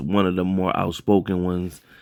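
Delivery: ordinary talk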